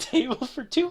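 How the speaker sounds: sunny, carefree, happy-go-lucky cheerful voice. Voicing a hostess greeting the players: happy-go-lucky hostess voice. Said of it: "very happy-go-lucky sounding l-, woman".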